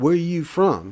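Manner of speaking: very loud, high, confrontational and challenging. A woman in a group by the fire pit calls out to the narrator, challenging tone. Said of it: "in a challenging tone".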